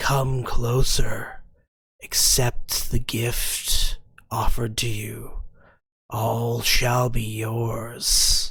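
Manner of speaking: low, otherworldly, echoing creature voice. Game master voices the tentacles speaking into the players' minds, voice echoing in your minds. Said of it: "you hear the a voice echo in your minds".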